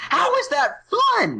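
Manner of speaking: put-on, very high, very slow outrage, stress on is. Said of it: "it kinda seemed like an outrage".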